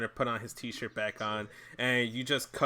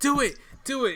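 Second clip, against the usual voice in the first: pushy, shrill, very high, loud insistent yell; 13 semitones higher, 5 dB louder than usual. Retelling how Mia pushed Keith to do the bit, imitating Mia yelling. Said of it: "And then Mia yells at him".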